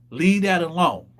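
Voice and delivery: plain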